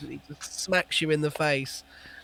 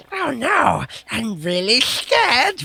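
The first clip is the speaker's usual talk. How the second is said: sarcastic creature voice, much higher, slower; 8 semitones higher, 5 dB louder than usual. Speaker voices the creature shouting from the top of the stairs, sarcastic Gollum voice. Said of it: "Really sarcastically".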